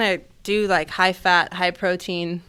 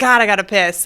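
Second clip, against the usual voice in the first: acted drunken voice, louder; 7 dB louder than usual. Retelling what a drunk friend in the back seat said, imitating Candace drunk. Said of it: "she's drunk".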